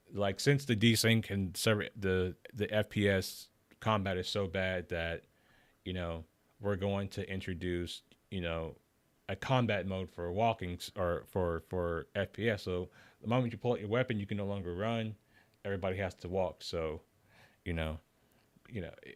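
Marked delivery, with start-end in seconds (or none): none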